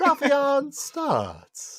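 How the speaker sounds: breathy boxing-ring announcer. Imitating a ring announcer who exhales a fighter's name: breathy Michael C. Williams announcing. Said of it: "There you go".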